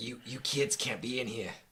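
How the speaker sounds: put-on angry grunting character voice. Voicing an angry grunt who orders kids out: game master voicing angry grunt. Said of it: "why do I always use the same voice for everything".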